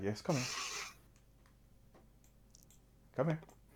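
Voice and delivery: breathy, hushed, soft whisper. Describing how she whispers to you, retelling her whisper. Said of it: "she sort of whispers to you".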